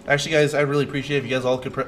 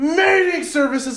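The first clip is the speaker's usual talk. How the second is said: very high, shrieking, screamed outburst; 7 dB louder than usual. Retelling a shop teacher's reaction to a misplaced part: imitating a teacher screaming. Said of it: "he was screaming".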